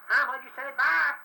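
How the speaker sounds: high-pitched, fast, mock young-person chatter. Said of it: "I can just imitate 'em".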